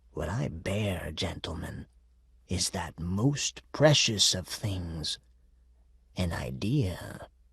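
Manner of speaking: low, raspy, husky voice. Reading a story aloud, a demon announcing his news: low husky voice. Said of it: "In a low, husky voice, as he said".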